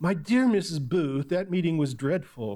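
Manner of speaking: put-on hoity-toity, haughty, snooty lady of the manor voice. Retelling what the lady of the manor said to her guest, in a mock haughty-toughty voice. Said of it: "Can you hear the haughty-toughty in the voice?".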